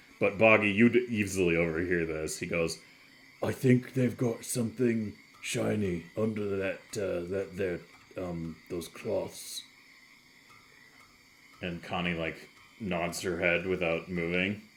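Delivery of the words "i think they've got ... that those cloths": quieter muttering under breath, as an aside. Voicing a character who leans over to another, muttering under his breath. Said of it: "says, under his, his, his, his breath, like, trying to be quiet".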